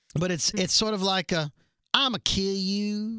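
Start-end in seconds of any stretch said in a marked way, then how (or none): 1.9-3.2 put-on very thick, laid-on Southern accent. Hosts discussing a character's accent, Alpha's super Southern accent. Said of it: "It's super Southern".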